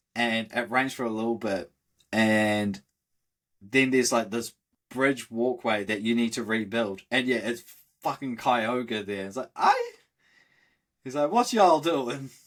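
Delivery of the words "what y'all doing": put-on Southern US accent, pitched up. Retelling a scene where Kyogre shows up, voicing it: Kyogre with southern accent. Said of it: "it's hilarious that they made Kyogre southern".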